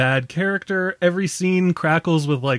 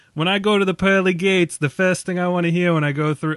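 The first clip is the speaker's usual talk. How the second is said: mock Boston-accented voice. Quoting what a man said about heaven, doing a boston accent. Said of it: "I'm doing a Boston accent, I apologize".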